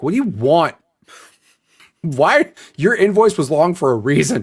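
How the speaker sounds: slow, drawn-out, mock annoyed teasing. Retelling teasing a coworker who asked for help: imitating giving someone grief. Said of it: "I gave Amanda the most shit".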